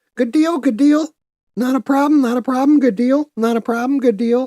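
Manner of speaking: very high, rapid, rattled-off repeated chirp. Act out how a man used to say his stock phrases, in a fast Mr. Hankey voice. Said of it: "He would talk like that fast and everything".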